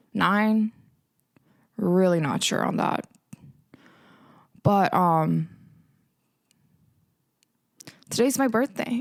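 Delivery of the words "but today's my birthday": choked-up, teary voice, close to tears. Host opening a birthday episode of the podcast, getting emotional. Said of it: "I don't know why I'm getting emotional".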